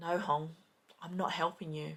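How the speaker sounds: really quiet smirking tone.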